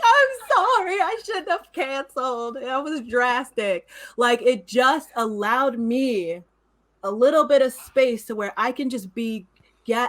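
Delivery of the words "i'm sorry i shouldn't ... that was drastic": acted-out crying, speaking through tears. Retelling an apology to a friend after a quarrel: retelling own crying apology. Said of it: "I start crying".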